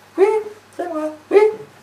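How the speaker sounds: put-on very high, small, childlike little voice. Acting out a phone call with friend Juliette: Juliette's little-girl voice. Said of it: "Petite voix".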